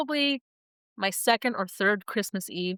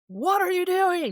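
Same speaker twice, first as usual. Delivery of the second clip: put-on shouting voice, pitched higher; 10 semitones higher, 3 dB louder than usual. Retelling how the captain ordered a family off the jet bridge: imitating the captain shouting. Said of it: "he's shouting this".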